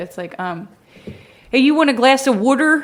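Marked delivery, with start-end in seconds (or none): 1.5-2.8 very loud, Baltimore accent mixed with Chicago. Asked to keep going, showing the Baltimore accent. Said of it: "Baltimore, I know, now I'm mixing Chicago".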